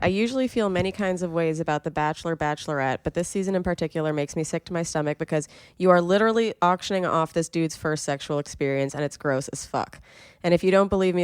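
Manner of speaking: ordinary talk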